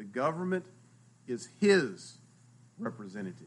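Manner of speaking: government is his representative, each word stressed, pauses between.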